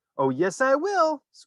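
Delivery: very high, tiny squeaky voice. A boy answers his parents, in a tiny squeaky voice. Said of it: "squeaked a tiny voice".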